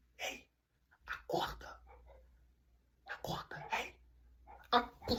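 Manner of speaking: slow, hushed, barely audible whisper. Retelling waking a friend at night while scared: imitating own whisper. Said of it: "bem baixinho pro meu amigo".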